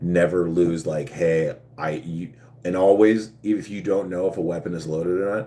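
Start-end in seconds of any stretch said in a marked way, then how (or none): none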